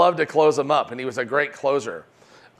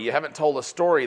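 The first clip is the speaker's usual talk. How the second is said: ordinary talk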